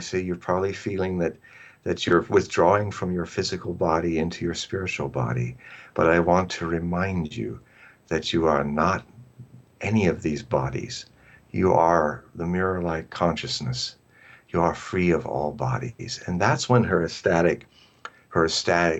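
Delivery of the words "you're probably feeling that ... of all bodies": whispering, lower. Retelling words whispered into her ear as she died: retelling a whisper. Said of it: "I'm whispering in her ear".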